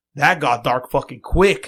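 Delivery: loud, booming, blunt, unrestrained blurted outburst. Retelling what a companion blurted out in a movie theater: retelling a loud outburst. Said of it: "all loud as fuck".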